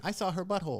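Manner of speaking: put-on high, childish young boy's voice. Voicing the voice they hear in their head, in a little boy voice. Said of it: "a little boy voice saying".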